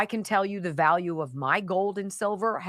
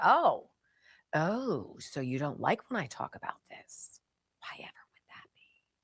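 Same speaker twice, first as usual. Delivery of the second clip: faintly menacing, sinister, falsely innocent tone; 2 semitones lower, 4 dB quieter than usual. Retelling own past reply after getting angry: retelling own sinister-sounding line. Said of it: "That sounded sort of sinister".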